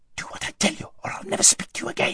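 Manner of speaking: hissed whisper. Narrator reading Aravis's line in the story: hissing. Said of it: "hissed Aravis".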